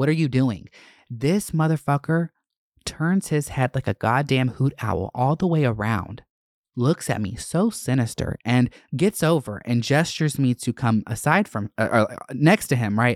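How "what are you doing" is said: acted-out angry outburst voice. Retelling flicking off a driver who slammed on the brakes: acting out own past anger. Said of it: "I'm getting angry".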